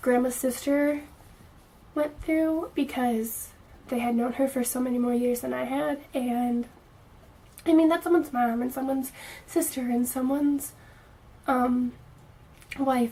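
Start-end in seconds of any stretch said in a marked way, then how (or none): 6.1-13.1 choked-up, emotional delivery. Talking about what the family went through, choked up. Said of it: "and I'm getting all choked up".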